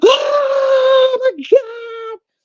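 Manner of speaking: play-acted, very high, drawn-out, freaked-out cry. Retelling seeing orange hair in the mirror: retelling own freak-out. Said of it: "I'm freaking out".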